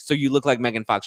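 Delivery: ordinary delivery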